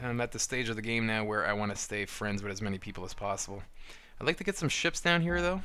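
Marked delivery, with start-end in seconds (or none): 4.2-5.6 voice cracking into a squeaky high pitch. Player talking through a board game turn when the voice slips; squeaky voice crack. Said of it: "My voice just went all squeaky".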